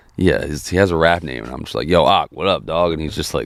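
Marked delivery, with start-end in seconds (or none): 1.9-3.0 put-on brash, cocky, overconfident delivery. Retelling walking up to someone and greeting them: imitating own overconfident greeting.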